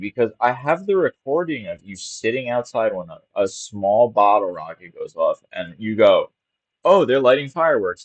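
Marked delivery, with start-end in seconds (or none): 6.8-8.0 casual, unbothered everyday tone, slightly high. Retelling the listener's reaction to a bottle rocket on a recording; imitating a totally normal tone. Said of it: "like totally normally".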